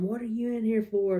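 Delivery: rowdy, loud, energetic shouting. Retelling what a loud woman in a jail cell yelled: imitating a woman yelling. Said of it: "she's just yelling".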